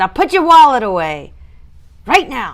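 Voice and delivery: put-on loud, grown-up big girl voice. Thanking a supporter, the speaker tells them to put their wallet away in a big girl voice. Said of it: "my big girl voice".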